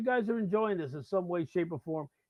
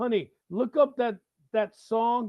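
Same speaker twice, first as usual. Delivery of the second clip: loud yelling, calling out; 4 semitones higher, 4 dB louder than usual. Speaker calls out his door to his wife in the house, yelling. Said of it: "I don't know why I'm yelling".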